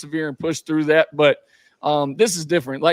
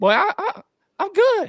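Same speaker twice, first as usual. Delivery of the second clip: put-on high-pitched voice, much higher than normal. Retelling what a player said on the bench after a pick, the speaker uses a high-pitched voice. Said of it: "he talks real like high pitch".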